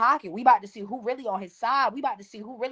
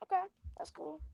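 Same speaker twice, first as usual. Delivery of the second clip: put-on calm, quiet voice, higher and quieter; 9 semitones higher, 14 dB quieter than usual. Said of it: "He was so calm, so quiet with it".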